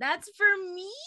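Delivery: put-on yell. Playing a character yelling at another character: in-character yell. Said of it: "I'm just gonna yell at him in Infernal".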